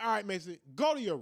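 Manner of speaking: plain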